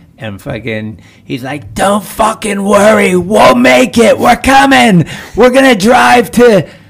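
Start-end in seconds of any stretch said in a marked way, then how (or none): 1.7-6.7 put-on thick, broad Scottish accent, very high and loud. Quoting Logan Hill telling them not to worry, thick Scottish accent. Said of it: "he's got this really thick Scottish accent".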